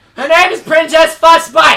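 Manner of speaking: very loud, high-pitched shout. After asking permission to yell, a player announces the princess's name, yelling. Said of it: "Can I yell?".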